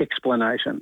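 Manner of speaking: dry, flat deadpan with no inflection. Delivering the punchline of a teacher joke, deadpan. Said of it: "Just like deadpan".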